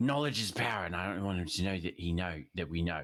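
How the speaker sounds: secretive whisper. In a role-play scene, whispering to a companion so another won't hear. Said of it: "I want to whisper to you".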